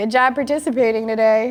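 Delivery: sarcastic, backhanded delivery. Giving an example while explaining what sarcasm is: sarcastic. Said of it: "Sarcasm is when you say pretty much the opposite".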